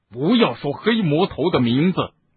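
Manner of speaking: stern, sharp, barked voice. Snape barks the order at Harry. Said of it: "斯内普喝道".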